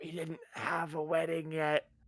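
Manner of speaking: hushed voice. Whispering an aside to another character in the game: whispering. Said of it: "I whisper to Tim".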